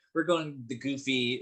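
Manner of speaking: ordinary talk, nothing marked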